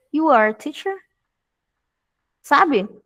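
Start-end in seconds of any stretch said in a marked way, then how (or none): 0.2-1.0 statement with question-like rising pitch on "teacher". Teacher shows a statement made into a question by tone: questioning rise on teacher. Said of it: "utilizando o formato afirmativo e colocando o tom de pergunta".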